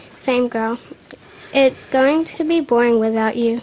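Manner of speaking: ordinary delivery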